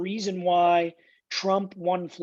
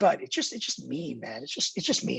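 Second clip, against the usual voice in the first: emotional, choked up, words catching in throat; 4 semitones lower, 4 dB quieter than usual. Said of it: "I'm gonna get, like, choked up talking about this".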